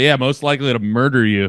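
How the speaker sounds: ordinary talk, nothing marked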